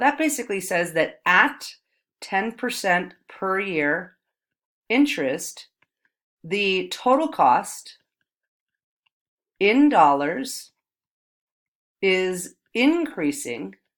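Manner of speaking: slow, unhurried, deliberate, drawn-out delivery. Explaining interest rates aloud while writing, speaking slowly so the writing catches up. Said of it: "I'm speaking slowly to wait for my writing".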